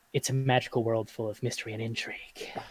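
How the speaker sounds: soft, hushed, secretive whisper. Player voices Timbers reporting into his ear what he saw, Timbers whispering. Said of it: "He whispers".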